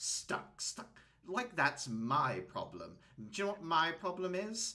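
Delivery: high grumbly complaining voice. Telling a story, the narrator voices a man complaining to a woman: grumbling. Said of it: "He grumbles and just says".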